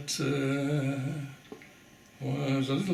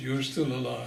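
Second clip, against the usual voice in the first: ordinary delivery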